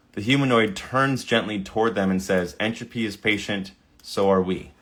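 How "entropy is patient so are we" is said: usual speaking voice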